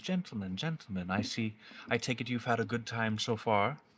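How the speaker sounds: dry, knowing, wry amusement. Game master voicing a dominatrix greeting the players' characters, with a wry, smiling delivery. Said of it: "she looks at all of you with a wry smile and says".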